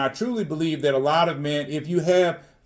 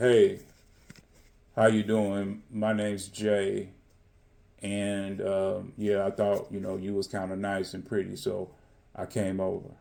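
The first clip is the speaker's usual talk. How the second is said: very low, dead-level flat monotone drone; 8 semitones lower, 5 dB quieter than usual. Demonstrating a dull way for a man to approach a woman, flat monotone. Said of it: "in a monotone be like".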